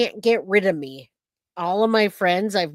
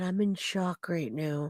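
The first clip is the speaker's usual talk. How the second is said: put-on whisper, much quieter and slower; 10 dB quieter than usual. Telling the viewers what she just said, repeat her words in a whisper. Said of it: "she just whispered".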